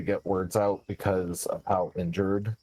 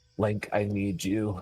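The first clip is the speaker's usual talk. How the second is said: frantic, panicking voice. Playing a character lying on the ground, calling out to Link, panicking. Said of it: "I'm panicking at this point".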